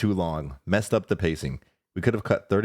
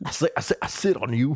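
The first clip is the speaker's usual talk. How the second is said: put-on southern rooster voice, much higher; 6 semitones higher than usual. Comparing a southern accent to a character with the others, do a Foghorn Leghorn voice. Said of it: "Foghorn Leghorn".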